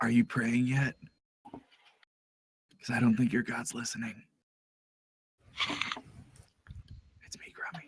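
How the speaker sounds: hushed, in-character whisper. Entering the smoke in a game scene and speaking to an ally: whispering in character. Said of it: "I'm gonna whisper when I enter the smoke".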